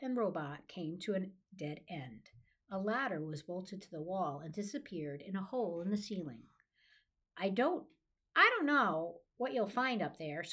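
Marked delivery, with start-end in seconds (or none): 7.4-10.4 high squeaking voice. Reading a rat's line to a robot at a tunnel's dead end, squeaked. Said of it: "squeaked the rat".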